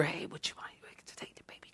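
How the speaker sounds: soft, gentle, hushed whisper under the breath. Retelling what a pastor said to a lady: imitating someone whispering. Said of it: "he just whispered".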